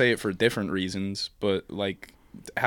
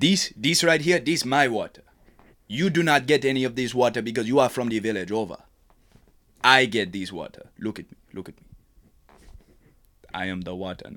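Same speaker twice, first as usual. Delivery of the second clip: put-on Jamaican accent; 3 semitones higher than usual. Performing lines another speaker asked for: put-on jamaican accent. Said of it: "can you do, like, a Jamaican thing?".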